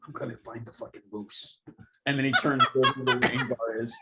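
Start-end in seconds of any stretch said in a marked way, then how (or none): 0.0-1.6 very hushed voice, dropped right down, very quiet. Narrating a man who, after thanking the Doc, speaks in a lowered voice. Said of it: "and he lowers his voice again".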